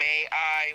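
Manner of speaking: ordinary talk, nothing marked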